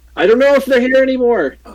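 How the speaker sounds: high-pitched yelling. Voicing a character who turns around and starts yelling. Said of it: "just starts yelling".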